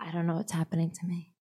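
whispering softly. Talking about starting meditation after workouts, whispering. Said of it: "Why am I whispering?".

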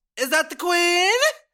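shrill, very high-pitched yelling call-out. Telling about a girl who drove by and shouted, retelling a girl's yell. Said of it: "She put her window down and yelled".

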